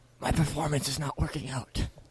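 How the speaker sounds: hushed, very soft half-whisper. Tabletop player, in character, half-whispering to a companion. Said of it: "I'm whispering to Amir".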